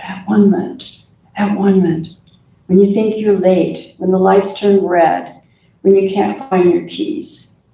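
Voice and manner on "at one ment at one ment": private, repeated whisper. Showing listeners how to quietly affirm a word: whispering. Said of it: "Whisper it".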